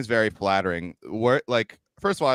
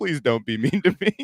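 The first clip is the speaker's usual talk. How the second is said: mock-earnest meek acted pleading; 3 semitones higher than usual. Retelling their own reply to another guy, retelling an earnest plea. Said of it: "the earnestness of it".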